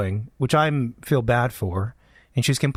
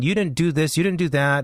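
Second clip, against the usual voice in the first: mock scolding woman's voice, yelling; 4 semitones higher than usual. Telling about a passenger on a flight, imitating her scolding her husband. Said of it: "Yelling at the husband, scolding the husband".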